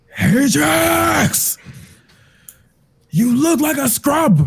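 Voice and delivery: very high yelling shout. In a game scene, a character shouts at Ajax on the battlefield: shouting.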